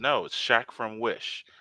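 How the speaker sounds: plain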